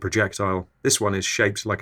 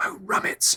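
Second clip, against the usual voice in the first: put-on whisper, quieter. Retelling running out of oat milk at the fridge: retelling a whisper. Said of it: "I whisper".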